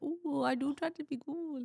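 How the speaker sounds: very high, sweet, put-on Wisconsin accent. Picturing a woman who said she tries to be cool, imitating her Wisconsin accent. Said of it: "Why did I give her an accent?".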